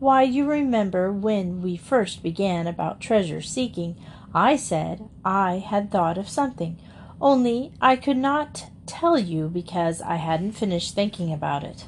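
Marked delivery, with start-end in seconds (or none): none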